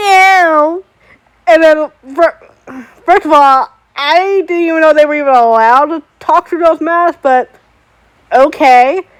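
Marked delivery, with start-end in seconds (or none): 0.0-0.8 put-on very nasal voice, pitched higher. Retelling how a masked performer refused a photo, imitating a very nasal voice. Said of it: "he responds to me in this very nasally voice".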